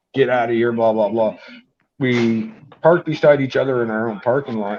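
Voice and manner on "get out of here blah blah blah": ordinary talk, nothing marked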